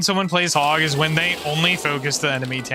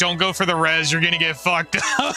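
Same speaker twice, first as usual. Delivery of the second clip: ordinary talk, nothing marked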